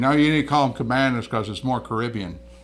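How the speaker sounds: ordinary delivery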